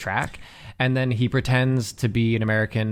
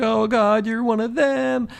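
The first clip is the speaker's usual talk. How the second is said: faked American accent, played up, higher pitched; 12 semitones higher, 4 dB louder than usual. Retelling a movie scene where Hans pretends to be American: imitating Hans faking an American accent. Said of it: "he pretends to be American".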